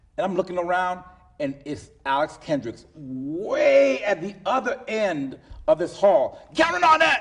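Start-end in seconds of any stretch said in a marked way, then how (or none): 6.6-7.2 very loud, very high-pitched screaming. Retelling hearing a name called across a big hall: imitating someone screaming a name. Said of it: "he was screaming".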